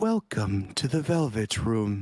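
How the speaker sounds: soothing, calm, almost gentle voice. Narrator voicing the voice that wakes the listener, soothing and almost gentle. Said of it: "a soothing and almost gentle voice wakes you up".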